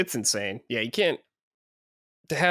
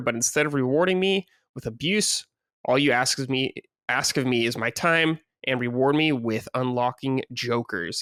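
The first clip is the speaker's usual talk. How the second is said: ordinary delivery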